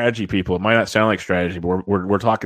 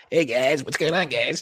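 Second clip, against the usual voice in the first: bad cartoon kid voice, pitched a touch high; 6 semitones higher, 3 dB quieter than usual. Answering a request to do a cartoon character voice: Eric Cartman voice. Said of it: "You do a good Eric Cartman at all?".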